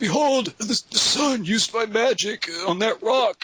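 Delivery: put-on breathless, wheezing, high voice. Retelling the story, Gandalf shows up minutes after the trolls turn to stone: wheezing Gandalf voice. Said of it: "[name]'s all, hey, I'm not a conjurer of cheap tricks. [name]'s all, yeah, they do magic. How many dragons you killed again? [name]'s all, in the future, I slay a [name]. [name]'s all, yeah, by dying".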